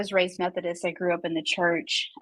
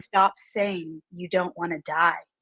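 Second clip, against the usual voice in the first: imitated firm voice; 3 dB quieter than usual. Retelling a voice in the head that came while praying: imitating a firm inner voice. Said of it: "a voice came very firmly".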